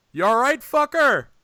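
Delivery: shrill, very loud, high-pitched yell. Retelling a wrestler yelling at his partner lying in the ring: imitating Tonga Roa yelling. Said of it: "Roa just yells".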